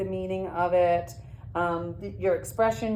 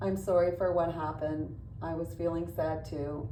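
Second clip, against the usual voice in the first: flat, expressionless, level monotone drone; 3 semitones lower, 5 dB quieter than usual. Giving an example line for a monotone voice round: flat monotone, no expression. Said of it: "That would be your monotone voice".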